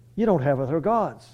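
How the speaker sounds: ordinary talk, nothing marked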